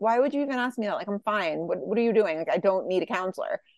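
ordinary delivery

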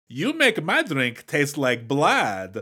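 slow put-on Hungarian accent. Quoting a movie character's insult line: hungarian accent. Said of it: "in my best Hungarian".

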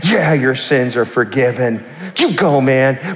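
slow, devout-sounding, approving tone. Retelling how the really spiritual people reacted: imitating the really spiritual people. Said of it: "all the really spiritual people were like".

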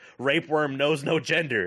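put-on joking yell, called out. Retelling a line yelled out while first watching a movie: retelling own yell. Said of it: "I yelled out".

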